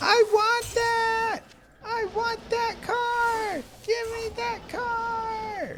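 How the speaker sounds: put-on very high, very slow, drawn-out toddler tantrum voice. Retelling how a little daughter demands a car: imitating a toddler's tantrum. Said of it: "she just goes into having her tantrum".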